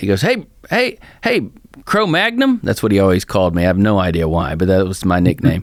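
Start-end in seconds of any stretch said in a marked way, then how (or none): 0.2-2.6 put-on heavy rural country accent, very high-pitched. Retelling a caller's greeting on the phone, in a thick country accent. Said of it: "he had this great thick country accent".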